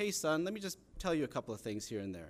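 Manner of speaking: usual speaking voice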